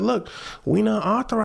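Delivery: smug, self-satisfied, dismissive tone. Retelling the police's reply when asked to fix things: imitating a smug tone. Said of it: "in a smug tone".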